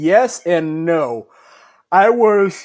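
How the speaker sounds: words stretched mid-yawn. Answering a question, yawning. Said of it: "I'm yawning".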